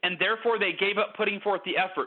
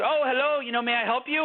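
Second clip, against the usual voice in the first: thick, heavy, not-very-good put-on European accent, laid on; 4 semitones higher than usual. The speaker quotes a lady who answered him, in a heavy European accent. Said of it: "this lady with a very heavy European accent".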